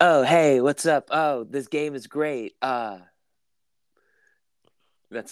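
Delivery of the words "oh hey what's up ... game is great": half-hearted, very slow, stretched-out, slightly high pop-star voice. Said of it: "I don't have a really good [name]".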